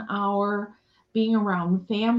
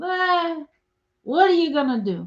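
droopy, defeated, glum and mopey, pitched up; 8 semitones higher, 3 dB louder than usual. Speaker quotes what Uncle Irwin would say, imitating Uncle Irwin.

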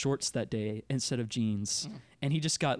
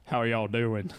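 put-on deep-pitched Southern country voice and accent; 2 semitones lower, 3 dB louder than usual. Giving an example of a seventh-grade friend's voice, Jacob's deep south country voice. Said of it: "Give us an example".

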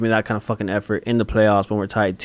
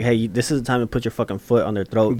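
ordinary talk

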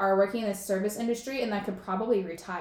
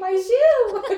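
very high, shrill, full-force loud scream; 12 semitones higher, 11 dB louder than usual. Retelling how a friend lost her shoe in a crowd: imitating Maddie screaming.

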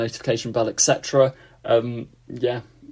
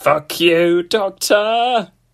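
robotic alien war-machine voice; 8 semitones higher, 6 dB louder than usual. Asked for a line to say as a Dalek, the speaker does a Dalek voice. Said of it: "What can I say as a Dalek?".

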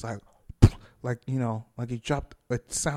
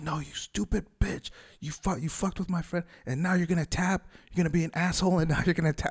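mock heated, berating, pitched-up angry yell; 5 semitones higher than usual. Retelling yelling at someone held in a choke, retelling yelling at him. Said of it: "yelling at him".

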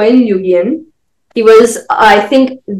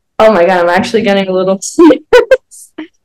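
giggly, sing-song voice, laughing through the words; 2 semitones lower than usual. Telling another speaker about a bus ride, giggling while talking. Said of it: "you're giggling".

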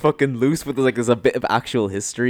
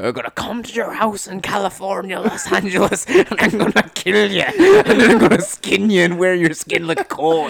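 put-on Irish accent, pitched up; 7 semitones higher than usual. Retelling what a fighter yelled after winning: imitating an irish accent. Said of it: "in an Irish accent".

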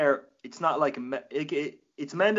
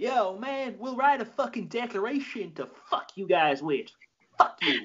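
Southern drawl, pitched up; 6 semitones higher than usual. Playing an American insulting the English, southern accent. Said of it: "Is that your southern accent?".

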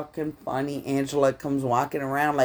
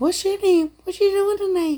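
squeaky, very high voice. Retelling what a guy at a dance whispered in the speaker's ear, Mickey Mouse voice. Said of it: "Like Mickey Mouse in my ear".

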